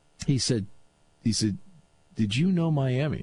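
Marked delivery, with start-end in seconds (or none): 2.2-3.2 imitated hushed tones. Retelling what someone told Johnny: imitating hushed tones. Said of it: "in hushed tones".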